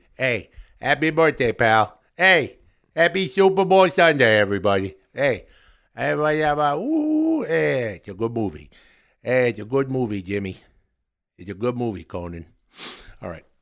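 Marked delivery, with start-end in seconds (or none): 0.2-12.5 chummy, pally put-on comedian patter. Doing a bit about Adam Sandler promoting his movies: Adam Sandler voice. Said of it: "that's Adam Sandler reviewing".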